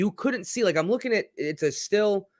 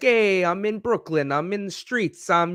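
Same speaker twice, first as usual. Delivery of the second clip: clumsy, awful, put-on Italian accent, pitched up; 5 semitones higher than usual. Retelling what someone did on a show, in an awful Italian accent. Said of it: "I do an awful Italian".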